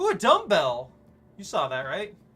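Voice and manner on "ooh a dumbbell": loud, thrilled, excited screaming outburst. Spotting a dumbbell while playing: excited scream. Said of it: "I'm not just screaming".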